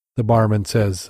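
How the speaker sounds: usual speaking voice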